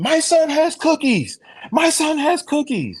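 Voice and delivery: shrill, booming, swooping bellow, stretched very slow. Retelling what was yelled on the Breakfast Club: imitating Dame Dash yelling. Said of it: "on the Breakfast Club yelling".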